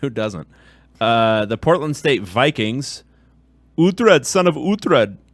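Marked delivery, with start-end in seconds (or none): 3.8-5.1 TV-character voice, raised, loud and high. Previewing Portland State's game, slipping in an Uhtred impression. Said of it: "That was my impression of uh, the character from The Last Kingdom".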